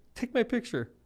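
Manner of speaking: play-acted very high, tearful sobbing and bawling voice. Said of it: "And she's bawling".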